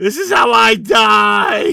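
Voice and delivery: drawn-out ragged panicked scream, high and very loud. Character in a group game believes he is about to die: panicked screaming. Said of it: "he just starts screaming about how this is how he dies".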